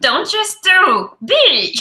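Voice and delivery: very high and loud, French accent. Speaker trying a French Yoda impression a second time, French Yoda impression. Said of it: "I'll try again".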